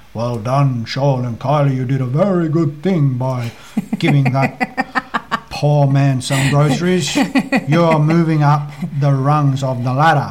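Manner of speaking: grand, approving divine voice. Speaker imagining what God would say to them, in a God impersonation. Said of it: "it's a good impersonation".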